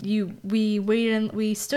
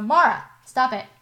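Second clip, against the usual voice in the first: scolding shout, yelling; 3 semitones higher, 4 dB louder than usual. Breaking off a story to stop a dog chewing a blanket, yelling at the dog. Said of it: "I'm going to yell at my dog right now".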